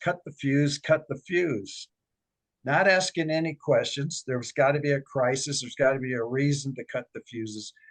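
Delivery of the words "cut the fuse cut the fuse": normal talking voice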